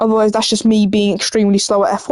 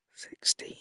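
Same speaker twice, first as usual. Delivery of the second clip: soft, very quiet, secretive whisper. Revealing the answer to an often-asked question, whispered 'sixteen'. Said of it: "I'm gonna whisper it".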